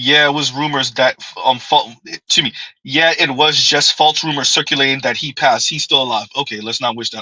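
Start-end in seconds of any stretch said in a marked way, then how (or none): none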